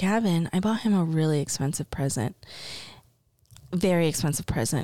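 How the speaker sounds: secretive, confiding aside. Telling Gavin about a present while someone might overhear; talking quietly. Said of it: "I gotta talk quiet because they might be able to hear".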